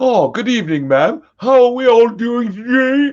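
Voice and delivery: very high, loud English accent going bad. Imitating a guy they used to know, with a degenerating english accent impression. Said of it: "his English accent would start well and then degenerate".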